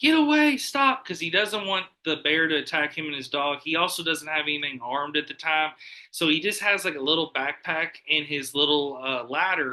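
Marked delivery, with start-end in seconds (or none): 0.0-1.0 shrill, very high, loud scream. Telling a story about a man shouting at a bear, retelling a man screaming. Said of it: "he's screaming like".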